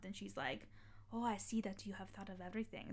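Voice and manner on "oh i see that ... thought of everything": bad, terrible put-on German accent. Retelling what she said to the speaker, in a terrible German accent. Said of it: "That's a terrible German accent".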